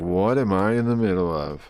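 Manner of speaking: play-acted confused, baffled, slow, musing tone. Reacting to a video, voicing the cosplayer's thoughts as a confused onlooker. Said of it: "the cosplayer girl is like".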